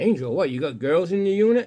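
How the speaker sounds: high, loud, put-on sarcastic, teasing disbelief. Man retelling his wife's question about angel from his unit, retelling it sarcastically. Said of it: "she said it sarcastically".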